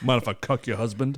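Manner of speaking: put-on deep voice. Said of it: "Pull some Tony Todd shit".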